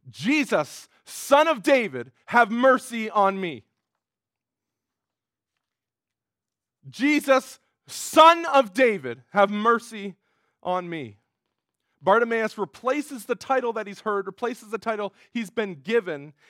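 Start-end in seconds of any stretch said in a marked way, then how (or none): 0.1-11.1 very loud, anguished, drawn-out desperate scream from the gut. Retelling a blind beggar's cry to jesus through the crowd: imitating a desperate scream. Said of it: "he screams out".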